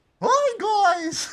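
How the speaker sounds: squeaked out high and loud. Chatting with friends, attempting a friend's cartoon voice, Mickey Mouse voice attempt. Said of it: "I wish I could do Jordan's Mickey Mouse voice".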